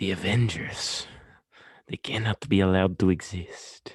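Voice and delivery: put-on German-style villain accent. Told to do the Zemo accent for the whole episode, speaker does Baron Zemo accent. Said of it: "You have to do the Zemo accent".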